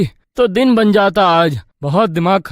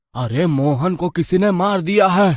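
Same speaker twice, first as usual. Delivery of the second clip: ordinary delivery, nothing marked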